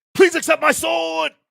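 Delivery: very high, creaky dubbed kung fu movie voice. Quoting a top kung fu movie line to the co-host, Heroes of the East movie voice. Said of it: "I'm also gonna try to do my do the voice".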